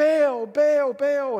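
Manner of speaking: loud, high-pitched call.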